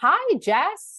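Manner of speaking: loud, very high, forced cheerful falsetto. Narrator answering a greeting amid slamming lockers, in a forced cheerful falsetto. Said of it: "keeping a falsetto of cheerfulness in my voice".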